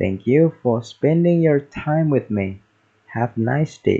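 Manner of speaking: plain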